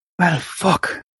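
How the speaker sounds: botched, muttered under the breath. Playing a character who finds the door locked, muttering under his breath. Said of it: "Tries to say that under his breath".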